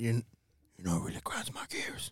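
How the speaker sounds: whispered, masked superhero voice. Restarting his question to the others, in a Batman voice. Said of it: "I did it in my Batman voice".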